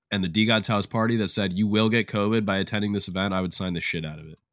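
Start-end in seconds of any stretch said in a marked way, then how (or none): none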